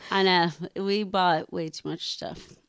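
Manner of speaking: plain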